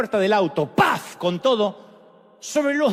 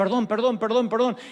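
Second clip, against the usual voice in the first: ordinary talk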